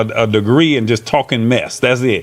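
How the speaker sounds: ordinary delivery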